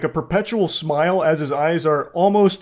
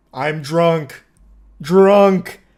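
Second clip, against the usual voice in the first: loud, blunt, dumb one-word caveman speech; 5 dB louder than usual. Retelling what Wayne said about his drinking, imitating Wayne like a caveman. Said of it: "Speaking like a caveman with like one word".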